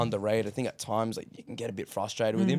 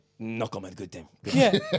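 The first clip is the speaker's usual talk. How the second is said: mock sarcastic interview-style delivery. Retelling post-match interview answers: imitating Arteta's sarcastic answer. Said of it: "doing the whole sarcastic Pep thing".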